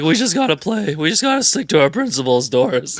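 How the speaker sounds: hoarse, raspy, high-pitched coach voice, voice giving out. Retelling a sideline interview with Nick Nurse: imitating Nick Nurse's hoarse voice. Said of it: "he was dying out here".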